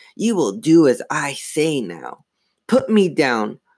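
slow, rasping, gloating dummy voice. Narrator voicing a living dummy as it struggles in someone's arm, raspy dummy voice. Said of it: "He blinked again. He giggled. His mouth open, making his grin grow wider. He tried to tug out of [name]'s grasp, but she hung on without even realizing she was holding him. "But you're a dummy," she squealed. He giggled".

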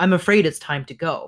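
ordinary delivery

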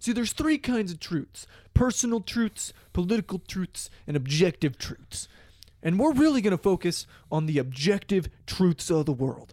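gravelly, lecturing science-teacher voice. Retelling an online ad for a class: gravelly Neil deGrasse Tyson voice. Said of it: "Neil deGrasse Tyson, ... his, like, gravelly voice".

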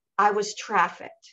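normal talking voice

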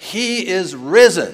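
full-volume, very loud, very high booming proclamation. Retelling what a man at the pulpit said to everybody, in his loudest voice. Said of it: "he says in his loudest voice".

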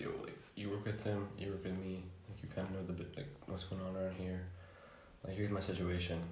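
ordinary delivery

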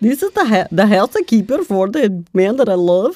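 put-on Swedish accent. Playing a housekeeper in a comedy bit, introducing the character in a swedish accent. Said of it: "Is that a Swedish accent?".

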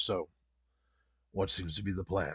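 big, deep, low, soft put-on voice. Voicing the little guy Rost, in a deep Rost voice. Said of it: "Deep voice for a little guy".

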